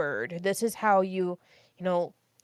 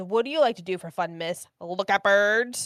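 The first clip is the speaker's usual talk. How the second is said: put-on teasing, mocking tone. Retelling how a student teased her about her hobbies: imitating a teasing student. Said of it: "he was being facetious and, like, teasing me".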